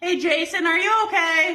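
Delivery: loud call.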